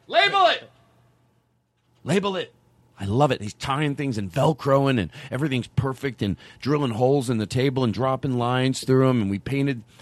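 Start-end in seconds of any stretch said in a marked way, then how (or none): 0.1-2.5 acted thrilled, happy yelling, high and swooping. Telling about someone labeling everything for them, excited yelling. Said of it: "I'm not yelling in a mean way".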